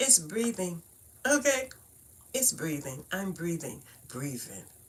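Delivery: Brooklyn accent on breathing. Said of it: "That's how we talk in Brooklyn".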